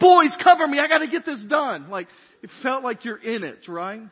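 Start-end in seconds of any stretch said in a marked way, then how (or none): 0.0-1.9 very loud, high shouted yell. Retelling calling to the boys during a virtual reality game: imitating own yell. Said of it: "I yelled at the boys".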